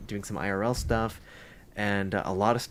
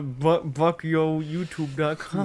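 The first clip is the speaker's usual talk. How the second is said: put-on talking with mouth half closed, higher; 7 semitones higher, 4 dB louder than usual. Giving the address of another speaker's channel: Bucky impression. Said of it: "how was my Bucky impression?".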